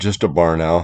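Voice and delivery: ordinary talk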